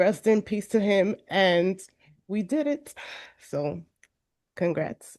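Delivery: voice catching, choked up with emotion. Thanking a late professor while speaking to a graduating cohort: getting emotional. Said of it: "I'm getting a little emotional too".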